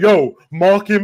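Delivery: put-on shouting. Recounting an argument with a teammate in a past game, he acts out what he yelled, imitating his own shouting. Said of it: "and I'm shouting at him".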